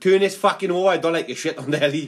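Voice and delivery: ordinary talk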